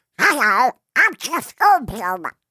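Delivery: very high, squawky, slow cockatiel voice. Describing Jeff Goldblum in real life, cockatiel-like Jeff Goldblum impression. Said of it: "sounds a lot more like a cockatiel".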